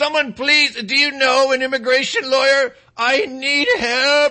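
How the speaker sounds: put-on weepy voice. Retelling a clown's video plea for a lawyer: mock weepy begging. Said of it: "The clown weeps in the video camera as he's begging for money".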